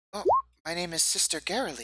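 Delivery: very high, swooping, sing-song goblin voice. Asked her name by a visitor paying tribute, a character answers, less-scratchy goblin voice. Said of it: "it's just the less scratchy goblin voice".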